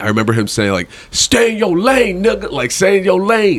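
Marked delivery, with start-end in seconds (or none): 1.1-3.6 high, heated, threatening yell. Retelling a bigger man yelling at him while with his girlfriend, retelling a yell. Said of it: "he's like yelling at me".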